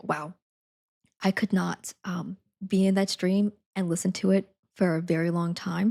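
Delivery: ordinary talk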